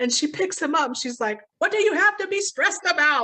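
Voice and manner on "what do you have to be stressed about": high, raised, scolding yell. Retelling a scene where a character picks up the dog: imitating someone yelling at a dog. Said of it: "yelling at the dog".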